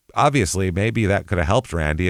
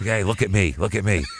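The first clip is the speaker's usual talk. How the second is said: imitated whisper. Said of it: "and he'd whisper".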